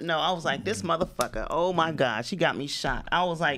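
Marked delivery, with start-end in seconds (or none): 0.6-3.1 tough gangster-style voice. Retelling getting shot, imitating own past words in gangster mode. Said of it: "in straight gangster mode".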